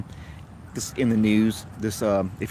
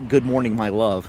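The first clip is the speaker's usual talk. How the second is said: ordinary delivery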